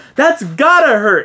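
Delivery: put-on shouted call, pitched way up high. Retelling how a moviegoer yelled out during the film: imitating someone yelling out. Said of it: "he literally yelled out".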